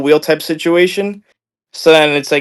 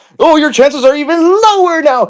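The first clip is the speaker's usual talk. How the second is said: put-on manic screaming, higher; 12 semitones higher than usual. Retelling live sellers hyping a Lego auction: imitating sellers screaming like maniacs. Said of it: "screaming like maniacs for three hours".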